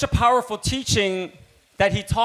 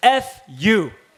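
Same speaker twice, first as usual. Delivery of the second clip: ordinary talk, nothing marked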